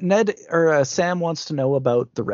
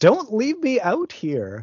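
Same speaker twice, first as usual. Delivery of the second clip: high screaming, pitch leaping and swooping; 7 semitones higher than usual. Recounting a stranded man's words as he's left in the wilderness, screaming. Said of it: "And he screams".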